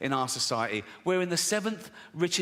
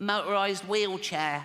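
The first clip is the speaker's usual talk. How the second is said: put-on child voice, higher; 2 semitones higher than usual. In a bit, a father asks six-year-old Timmy his Christmas wish: doing little Timmy's voice. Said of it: "I promised Jane I wouldn't do the voice".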